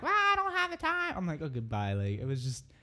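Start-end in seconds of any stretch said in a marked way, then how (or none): 0.0-1.1 mock piercing, very high-pitched scream. Podcast host retelling people next to them at a packed place, retelling a scream.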